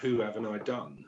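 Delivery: ordinary delivery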